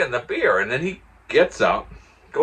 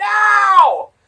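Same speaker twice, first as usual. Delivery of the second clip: shrill no, stretched long, very loud and high; 10 dB louder than usual. Retelling how someone yelled while tackling: imitating someone yelling.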